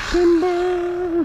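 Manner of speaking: timber yelled, high-pitched.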